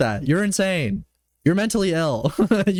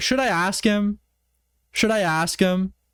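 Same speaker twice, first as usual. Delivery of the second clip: usual speaking voice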